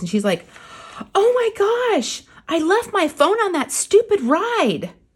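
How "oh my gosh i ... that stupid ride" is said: mock alarmed, panicked, very high yell. Retelling a woman on a ride who lost her phone: imitating a panicked yell. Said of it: "yells to the rest of her family".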